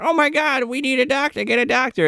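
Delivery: high, frantic, put-on panicked voice. Retelling a movie scene where Kathleen is freaking out: imitating Kathleen freaking out. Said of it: "Kathleen's freaking out".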